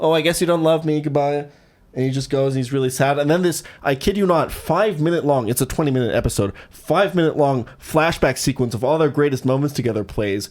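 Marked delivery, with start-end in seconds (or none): 0.0-1.5 put-on guilt-tripping child voice, higher pitch. Acting out a fourth grader manipulating a boyfriend: imitating a manipulative fourth grader. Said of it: "fourth grader manipulating their, like, boyfriend".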